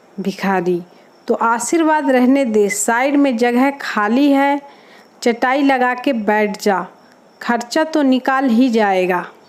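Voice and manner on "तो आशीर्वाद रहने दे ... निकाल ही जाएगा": usual speaking voice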